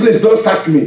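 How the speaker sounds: ordinary delivery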